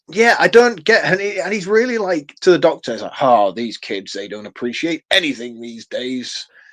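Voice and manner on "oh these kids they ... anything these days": terrible put-on American accent. Quoting a film character talking to the doctor: terrible american accent. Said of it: "my American accent's terrible".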